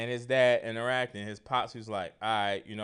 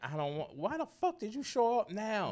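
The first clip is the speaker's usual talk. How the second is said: mock shrieking, very high and climbing scream; 10 semitones higher, 4 dB quieter than usual. Retelling a story where a woman screams as a man shows up at the door. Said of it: "she screaming like".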